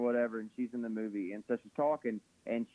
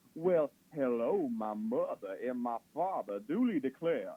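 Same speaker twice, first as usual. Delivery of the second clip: very slow, awful, fake put-on southern drawl. Mocking people who fake Southern accents, in a bad fake Southern accent. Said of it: "when people don't have southern accents, it's awful".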